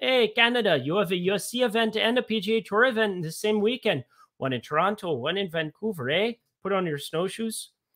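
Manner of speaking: put-on Minnesota accent. Going over golfers and jokingly addressing canada: minnesota accent. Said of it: "I'm doing like a Minnesota accent".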